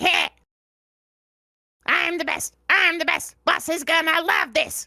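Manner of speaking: high, impish, boastful goblin voice. Doing the goblin character's voice around the apartment, in a little goblin scoundrel voice. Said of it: "sometimes I just do his voice".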